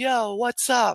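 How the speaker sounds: put-on, casual New York accent. Speaker imitating teens who want to talk like New Yorkers; New York accent. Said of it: "they want to talk like a New Yorker".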